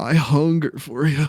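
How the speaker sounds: sultry, cartoonish character voice. Retelling a show where Goofy gets sexual about a sandwich: seductive Goofy voice. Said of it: "he talks like that".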